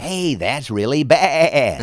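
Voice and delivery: imitated radio announcer voice. Showing a line from a cartoon character: Casey Kasem voice. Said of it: "I'm basically doing Casey Kasem".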